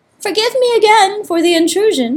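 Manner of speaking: very high-pitched, squeaky little mouse voice. Narrating a story, voice the mouse's line in a squeaky mouse voice. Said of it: "the mouse squeaked, his whiskers all a-tremble".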